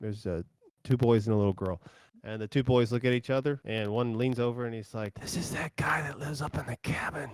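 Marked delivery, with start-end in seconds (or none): 5.2-7.3 put-on hushed, whispering child's voice. Voicing a child leaning over to whisper to another: child character whispering. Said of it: "one of the kids kinda whispers over".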